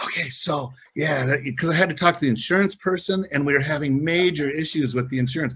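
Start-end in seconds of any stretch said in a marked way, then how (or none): 0.0-1.3 put-on whisper, higher. Retelling a phone call made while up in a tree hunting: imitating own whisper.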